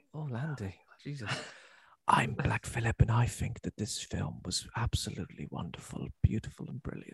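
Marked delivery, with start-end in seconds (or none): 2.0-7.1 soft, breathy, close ASMR whisper. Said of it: "He's got a lovely ASMR-like".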